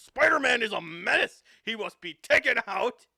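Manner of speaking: harsh, brash, very loud ranting. Imagining a debate about Spider-Man: harsh, brash J. Jonah Jameson voice. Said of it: "harsh, brash J. Jonah Jameson, just like".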